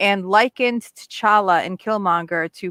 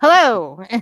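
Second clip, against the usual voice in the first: raised newscaster voice after a brief pause; 3 semitones higher, 7 dB louder than usual. Imitating how newscasters say hello: imitating a newscaster's greeting. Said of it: "when they do the newscasting".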